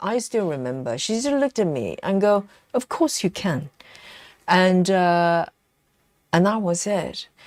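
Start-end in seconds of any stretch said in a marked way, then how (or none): 2.7-3.7 certain, confident, no-doubt-about-it delivery. Retelling what a lady said when you doubted yourself, imitating a certain, confident tone. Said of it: "that certainty, that tone of voice".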